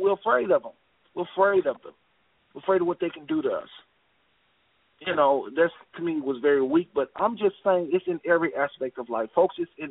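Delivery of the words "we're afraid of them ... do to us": ordinary delivery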